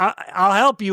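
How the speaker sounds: plain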